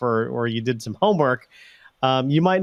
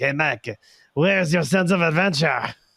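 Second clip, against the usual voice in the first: fake French accent, put on; 3 semitones higher than usual. Retelling a companion urging him onto a motor scooter, fake french accent. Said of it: "he puts on a fake French accent".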